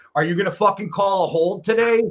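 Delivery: mock yelled, screaming voice. Recalling yelling at the TV during a game, retelling own screaming at TV. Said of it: "I literally was screaming that at the TV".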